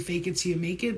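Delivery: plain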